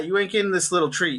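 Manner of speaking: ordinary delivery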